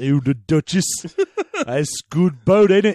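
exaggerated, swooping mock English accent. Continuing a made-up british exchange, in exaggerated mock english accent. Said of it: "He just went up to a publisher and said, hey, have you heard of a little thing called [name]? ... The accent, John. Oh, I'm accent. Sorry. Oi, mate, you ever heard of a thing? No, that's Australian. What's Plymouth accent even? What is a Plymouth accent?".

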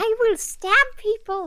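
abashed, sheepish, self-conscious tone. Realizing she just screamed across the bar, the goblin repeats herself, speaking very quietly. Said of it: "go very quietly".

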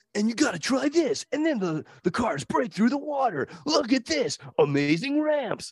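mock, very high, hyped kids' commercial pitch. Retelling a kids' toy commercial they watched, imitating hyped kids' toy commercial. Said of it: "And the commercial was like".

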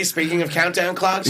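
ordinary talk

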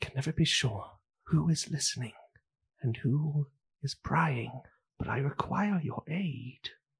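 very quiet, hushed murmur under the breath. Voicing a character edging into an armoire, asking for aid: speaking very quietly. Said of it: "very quietly he goes".

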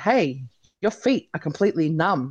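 normal talking voice

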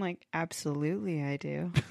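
low, hushed, soft, creepy voice. Suggesting a wedding vow reply, then saying it in a creepy Jim voice. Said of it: "say it like in a kind of creepy voice".

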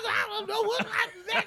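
squeaky high voice. Imitating how a friend talks, likened to Eddie Murphy: imitating Ray Money.

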